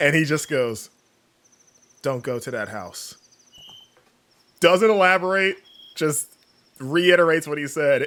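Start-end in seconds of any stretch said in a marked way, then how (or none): 2.0-3.2 mock-grave, weighty tone, lower and quieter. Retelling a man's repeated warning to the speaker and a friend, mimicking a grave, weighty warning. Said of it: "with just like this weight and gravity".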